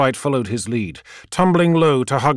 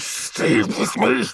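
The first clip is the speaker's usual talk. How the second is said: hissing through gritted, clenched teeth; 8 semitones higher than usual. Diving low under cannon fire, the pilot hisses through clenched teeth. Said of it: "He hissed through clenched teeth".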